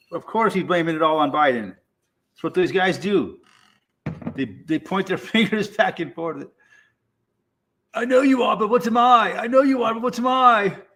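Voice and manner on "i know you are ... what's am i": weird put-on English accent, pitched up. Mocking politicians pointing fingers back and forth, attempted english accent. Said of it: "I was trying to do an English accent there".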